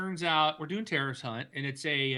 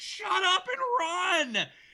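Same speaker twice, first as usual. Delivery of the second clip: mock very high, very slow, drawn-out shout; 3 dB louder than usual. Retelling yelling at a teammate through Xbox Live: retelling own yell.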